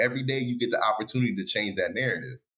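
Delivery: ordinary delivery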